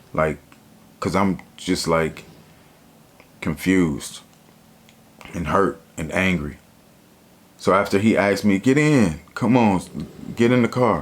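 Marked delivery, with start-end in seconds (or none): 8.6-11.0 sweet, friendly, gentle and nice tone. Retelling how he asked her to get in the car: retelling a soft, nice request. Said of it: "Soft and nice".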